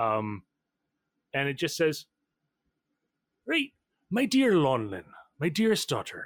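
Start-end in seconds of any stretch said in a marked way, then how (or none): 3.5-6.3 swooping, stagey put-on pirate voice. Reading a father's letter aloud in a game, accidental pirate voice. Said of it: "That's the wrong voice. He's not a pirate".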